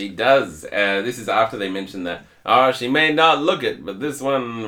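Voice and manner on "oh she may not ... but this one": put-on Western cowboy accent, pitched high. Quoting a man's line about the oldest robot in the park, in a cowboy accent. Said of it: "I don't know why I'm talking in a cowboy accent".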